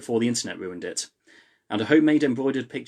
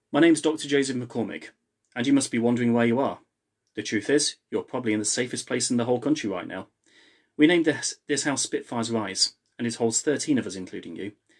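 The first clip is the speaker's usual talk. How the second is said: ordinary delivery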